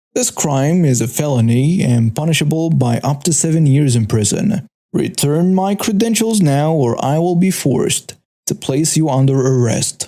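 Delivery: plain reading voice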